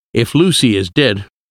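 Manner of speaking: ordinary delivery, nothing marked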